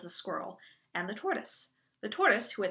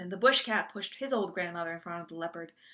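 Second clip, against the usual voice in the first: usual speaking voice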